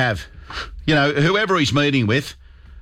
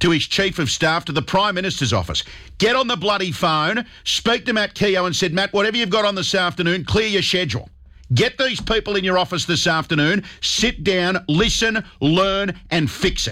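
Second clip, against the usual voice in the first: fired-up raised voice, pitched high. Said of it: "to raise my voice".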